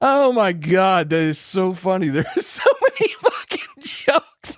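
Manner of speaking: talking through laughter. Reacting to another speaker's joke, laughing while talking. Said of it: "I can't stop laughing".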